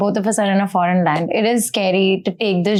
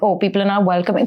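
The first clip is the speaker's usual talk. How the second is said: plain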